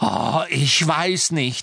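slow, biting, cutting sarcastic yelling. Answering a friend in the middle of an argument, shouting with biting sarcasm. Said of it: "schrie Hermine mit beißendem Sarkasmus".

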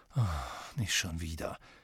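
very low, quick groaning. Harry, asked again about the Half-Blood Prince, answers groaning. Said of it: "stöhnte Harry".

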